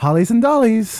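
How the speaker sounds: showy, flamboyant delivery with flair. Showing how a phrase should be said, with flamboyant flair. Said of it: "You have to say it with a flair".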